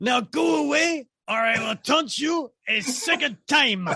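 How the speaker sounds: high, jeering, taunting put-on French accent. Quoting Monty Python after someone brings up John Cleese's role, do a French Taunter impression. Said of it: "as the French taunterer".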